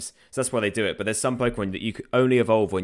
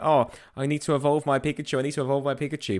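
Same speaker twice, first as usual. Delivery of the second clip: put-on upset whine, higher, slower; 4 semitones higher than usual. Retelling a Pokémon episode plot, imitating upset Ash. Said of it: "Ash gets all upset".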